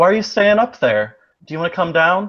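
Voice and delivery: chirpy, high, meowing cat-like voice. Speaker coaxes a cat to come down, meowing and chirping like a cat. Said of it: "I sound like I'm meowing and chipping a little bit".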